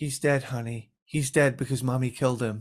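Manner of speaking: mock dry, flat, expressionless deadpan delivery. Recalling a movie with a friend, imitating the mom's deadpan line. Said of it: "the mom is so deadpan where she just goes".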